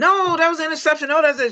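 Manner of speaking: very high, squealing, yelling voice. Retelling watching a game at home, retelling yelling at the tv. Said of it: "So I'm yelling at the T V".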